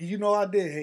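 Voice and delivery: ordinary delivery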